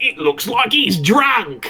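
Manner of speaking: put-on high, slow, drawling Australian accent. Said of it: "I'll do Australian".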